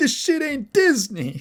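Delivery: very high, fed-up, angry, pissed-off complaint. Retelling a manga character upset about a billboard: imitating someone pissed off. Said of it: "he gets all pissed off".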